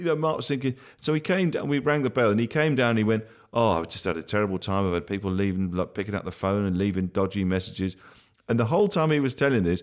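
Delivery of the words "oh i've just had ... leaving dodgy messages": ordinary talk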